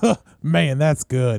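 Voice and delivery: slow, put-on, fake Southern drawl accent. Recalling a man in the crowd at a show, imitating his fake Southern accent. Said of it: "one guy with like the fake Southern accent".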